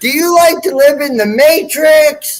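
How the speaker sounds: imitated screaming. Retelling a wild spiritual experience: retelling screaming at people. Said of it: "I'm screaming at other people".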